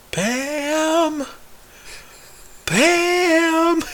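very high, stretched-out, drawn-out shriek. Recounting Michael calling Pam from the conference room couch, retelling a scream.

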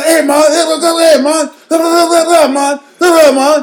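very high, loud, rambling, babbling holler. Retelling how a homeless man followed them, imitating a man yelling. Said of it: "yelling, like, some shit".

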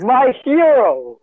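very high, yelled princess voice. Narrating a game scene, the princess turns to the player and yells. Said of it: "the princess turns to you and yells".

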